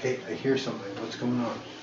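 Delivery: whisper. A player riding on a companion's shoulders speaks to them: whispering. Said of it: "I'm whispering to you".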